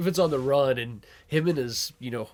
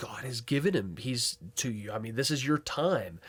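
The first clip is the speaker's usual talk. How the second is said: put-on men's whisper, quieter; 4 dB quieter than usual. Retelling how David's men urged him in the cave: imitating men whispering. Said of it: "David's men are whispering".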